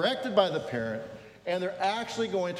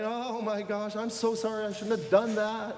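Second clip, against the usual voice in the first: mock tearful crying child voice, higher pitch; 3 semitones higher than usual. Acting out a child caught lying, who cries: imitating a crying child. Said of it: "you'll cry".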